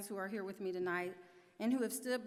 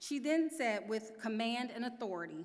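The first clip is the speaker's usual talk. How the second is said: ordinary talk, nothing marked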